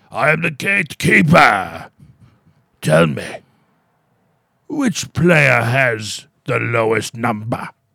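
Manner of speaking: put-on creepy old man voice with a Scottish accent. Describing a video board game, the speaker voices the hooded figure on the TV; creepy old Scottish Gatekeeper voice.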